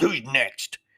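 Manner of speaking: play-acted, growled, fed-up, frustrated voice. Retelling how the frustrated man at the tower turned around: retelling a growl. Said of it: "He turned around and growled".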